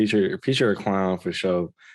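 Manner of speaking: ordinary talk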